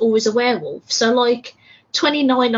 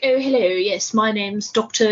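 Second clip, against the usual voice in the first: exaggerated, over-the-top British accent. Imitating film characters who walk in: exaggerated British accent. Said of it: "super British".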